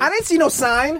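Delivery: very high-pitched put-on woman's voice.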